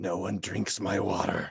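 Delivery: crackling, rough, electric-sounding rasp. A game master voices a living lightning bolt above a lake, crackly voice. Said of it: "says in this crackly voice".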